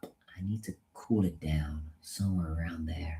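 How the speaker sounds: very quiet, soft, toned-down American accent. A British speaker demonstrates an accent they are working on, in an American accent. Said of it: "That's my American accent".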